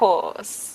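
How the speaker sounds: put-on British-accented voice. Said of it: "the British is becoming contagious".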